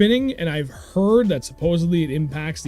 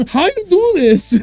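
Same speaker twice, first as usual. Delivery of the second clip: very high, slow, put-on broken-English accent; 13 semitones higher, 8 dB louder than usual. Joking about a beginner failing to cast, in a put-on broken foreign accent. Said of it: "Just talking like a really broken foreign accent".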